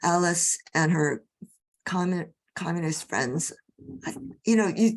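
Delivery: voice cracking mid-word on "commun-". Telling Alice's story as World War Two approached, voice cracking. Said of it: "did you hear the crack in my voice?".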